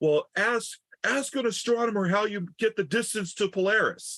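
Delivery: yelled out, pitched very high. Retelling what he yelled out in front of the patrons: imitating someone yelling. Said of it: "he yells out".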